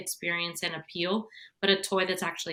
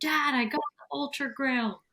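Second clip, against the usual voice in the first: put-on child voice, high calling yell; 7 semitones higher than usual. Retelling how a daughter yelled from the playroom: imitating a daughter yelling. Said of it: "he hears his daughter yell".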